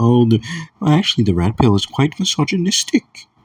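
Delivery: put-on, very high, prim-sounding British accent. Imitating a dating coach saying the red pill is misogynistic: imitating a british accent. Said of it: "in that British accent or whatever".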